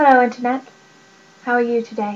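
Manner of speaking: sudden, put-on British accent. Greeting viewers at the start of a video: british accent. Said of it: "that British accent just came out".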